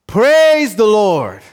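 proud, bold, unashamed shout. Telling of a faithful woman's morning ritual on her porch, imitating a woman shouting. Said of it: "she shouts".

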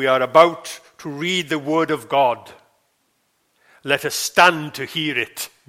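put-on deep, loud, authoritative announcer voice. Recounting a man in uniform addressing a room; imitating a deep voice. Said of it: "he says in a deep voice".

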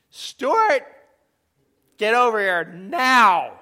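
booming, very loud, stern parent voice. Illustrating how parents call a child by first name; parental voice. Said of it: "Can you hear the parental voice in there?".

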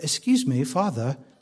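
low, soft, quiet put-on English accent. Speaker voices what a hungry baby might say, in the Caleb English accent. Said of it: "That's my Caleb English accent".

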